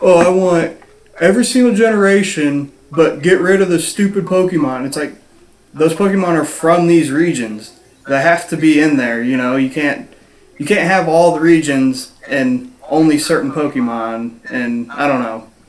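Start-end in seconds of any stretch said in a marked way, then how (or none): 0.0-4.9 mocking ranter voice, played for laughs. Imitating Pete's words in a discussion: imitating Pete. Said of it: "it's exactly what Pete's like".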